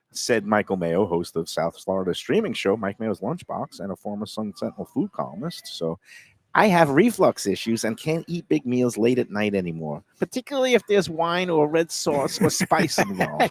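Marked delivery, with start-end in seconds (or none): 6.5-13.5 put-on very high-pitched, elderly Brooklyn accent voice.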